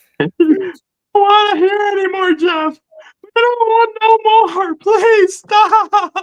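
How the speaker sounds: mock pleading shout.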